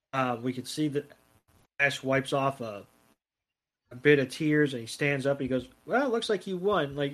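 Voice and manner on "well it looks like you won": high-pitched, half-hearted, disingenuous insincere tone. Retelling a losing character conceding the battle: imitating a disingenuous tone. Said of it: "the most disingenuous way".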